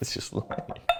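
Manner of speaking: very soft whisper.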